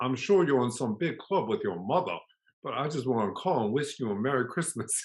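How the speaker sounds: put-on American Southern accent. Retelling a Christmas phone call from an artist, in Comer Jennings' Southern accent. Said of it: "in his Southern accent".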